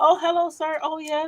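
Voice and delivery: put-on prim, extra-proper, high polite voice. Retelling how they talk around a police officer: imitating own proper polite voice. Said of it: "real proper".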